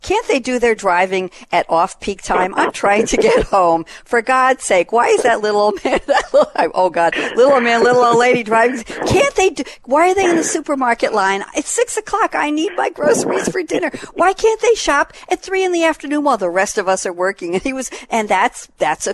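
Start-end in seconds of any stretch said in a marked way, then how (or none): 0.0-17.5 mock fed-up, very annoyed, high griping rant. Retelling what a friend used to say coming home from work: imitating an annoyed friend. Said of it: "used to get very annoyed".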